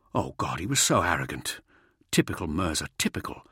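ordinary delivery, nothing marked

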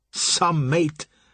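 scornful, dismissive tone. A man comments to a companion during a steamer chase, with contempt. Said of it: "Carl Fram said with contempt".

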